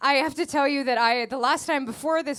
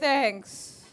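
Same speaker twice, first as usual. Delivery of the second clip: put-on flat, monotone delivery. Retelling getting a present at a birthday: imitating own monotone thanks. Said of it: "very monotone".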